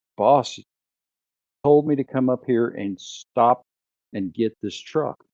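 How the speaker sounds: plain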